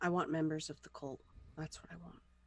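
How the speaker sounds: muttered grumble on the side. As the group's muscle lady, telling the head guy what she wants: muttered under her breath. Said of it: "She sort of says under her breath".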